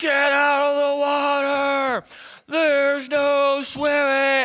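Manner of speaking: mock very high, very slow, drawn-out crazed screaming. Retelling a park ranger shouting at them in the water: retelling crazy screaming. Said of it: "we hear this guy screaming like crazy".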